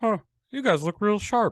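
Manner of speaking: high, loud, off, frog-like bad comedian voice. Retelling what a guy said after walking right up to you and your friends, in a bad Ray Romano voice. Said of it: "That's my Ray Romano voice".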